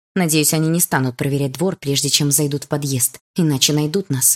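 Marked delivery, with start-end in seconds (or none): none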